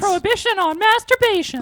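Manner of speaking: put-on very high, loud, shrill cartoon old-man voice. In a group discussion of constitutional rights: old Family Guy neighbor voice. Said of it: "You sound like someone from Family Guy, the the old neighbor".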